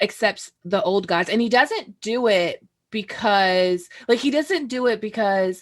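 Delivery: ordinary delivery, nothing marked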